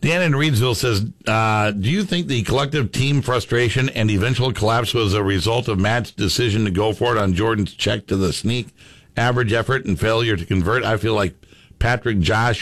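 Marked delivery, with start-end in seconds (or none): none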